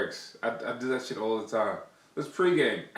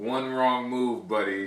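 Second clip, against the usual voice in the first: plain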